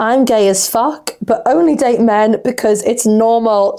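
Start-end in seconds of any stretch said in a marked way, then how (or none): none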